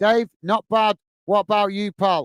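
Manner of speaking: ordinary talk, nothing marked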